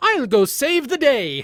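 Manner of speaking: very high-pitched, loud put-on character voice. Demonstrating character voices, this one in a higher-pitched voice. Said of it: "in a higher pitch".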